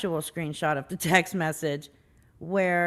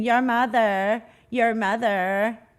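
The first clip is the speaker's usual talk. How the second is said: slow screaming with each word stretched out; 3 semitones higher, 4 dB louder than usual. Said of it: "you were also screaming".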